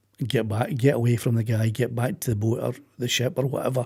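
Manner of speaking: usual speaking voice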